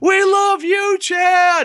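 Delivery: scream as loud as possible, very high-pitched.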